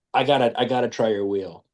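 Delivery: ordinary delivery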